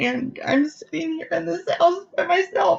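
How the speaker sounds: very high-pitched, tearful crying. Telling a listener about being alone in a new house, crying. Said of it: "I didn't mean to cry".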